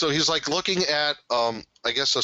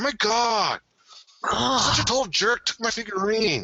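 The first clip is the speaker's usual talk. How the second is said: put-on awkward teen voice, higher pitch; 8 semitones higher than usual. Imitating a character who complains about a rival: Napoleon Dynamite voice. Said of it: "He says it like Napoleon Dynamite".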